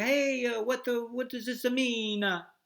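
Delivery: mock Italian-accented English. Demonstrating accents one country at a time, speaker does an Italian accent. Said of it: "Italy, it's like".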